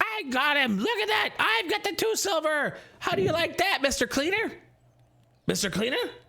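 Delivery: very high-pitched, squeaky put-on goblin chatter. Speaking to Elroth, voicing a character in a put-on character voice. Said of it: "this sort of voice like".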